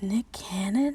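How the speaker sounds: imitated, put-on whisper. Retelling how a man reacted on seeing a photo: imitating a whisper. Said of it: "And then he whispers".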